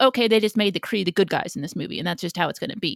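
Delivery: ordinary delivery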